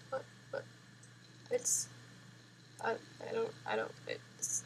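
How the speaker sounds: put-on hushed, slow, broken-up weeping whisper with stammer. Imitating people with bulky phone cases reacting: mock crying. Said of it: "and they're crying now".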